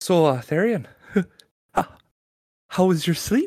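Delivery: holding back giggles. Player speaking in character to another character, holding back giggles. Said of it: "while trying to hold back my giggles".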